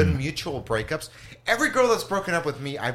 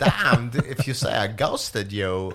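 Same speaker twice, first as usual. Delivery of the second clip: low-pitched, very slow, crawling delivery; 4 semitones lower than usual. Doing a quick impression after the other speaker's prompt, Christopher Walken impression. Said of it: "Chris Walken".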